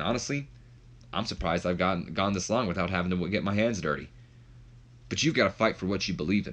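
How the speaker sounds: ordinary talk, nothing marked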